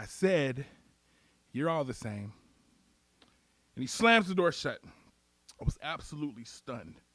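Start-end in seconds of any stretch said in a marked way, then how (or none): 0.0-2.3 hushed half-whisper, close to the ear. Retelling what the cop said while shutting him in the car: imitating a cop half-whispering. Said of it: "he whispers to me".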